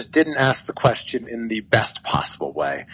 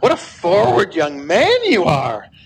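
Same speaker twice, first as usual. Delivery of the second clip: playfully affronted, half-flirty feigned offense, high and raised; 8 semitones higher, 5 dB louder than usual. Retelling how she jokingly answered his question: mock-offended, quasi-flirty. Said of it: "jokingly turned it into being feigned offended and went".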